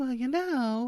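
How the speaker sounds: very high, chatty, gossipy lady voice. Retelling how a woman walked by and passed on a rumor, imitating Abigail. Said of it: "she's like".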